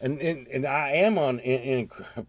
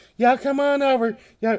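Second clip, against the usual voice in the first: put-on friendly voice, higher and louder; 12 semitones higher, 7 dB louder than usual. Retelling a driver waving them in: imitating Sandra Bullock being nice. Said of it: "it was totally her 'cause she was being nice".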